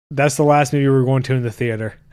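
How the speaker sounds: normal talking voice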